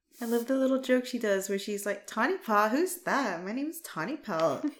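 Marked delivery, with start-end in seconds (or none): 2.1-4.7 put-on full Valley Girl voice. Acting out Tawny Pelt's sibling joke: Valley Girl voice as Tawny Pelt. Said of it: "Valley Girl".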